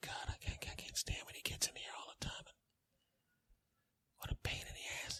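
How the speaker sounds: very quiet whisper under the breath. Speaker complains about someone while sitting right next to them, whispering. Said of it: "basically whispering means nothing".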